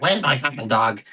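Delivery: put-on drunk voice. Retelling a film scene where Supergirl comes in drunk: imitating drunk Supergirl. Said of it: "she's all drunk and she's like".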